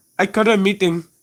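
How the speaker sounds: most exaggerated, over-the-top Indian accent. Gamers joking after an emergency meeting, asked to say it most Indian: most Indian accent possible. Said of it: "Say it in the most Indian".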